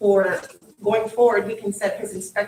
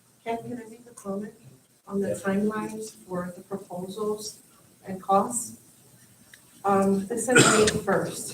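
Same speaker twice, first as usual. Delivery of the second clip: soft voice, too quiet to carry far; 5 dB quieter than usual. In a committee meeting, a member asks ken to comment on the timelines: too quiet. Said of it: "Speak up a little".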